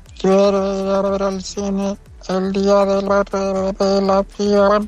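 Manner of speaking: extraterrestrial voice. A listener's sent-in audio doing an alien voice. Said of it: "¿cuál sería tu voz de extraterrestre?".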